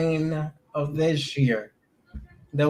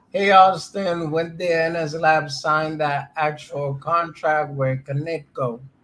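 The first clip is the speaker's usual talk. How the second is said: normal talking voice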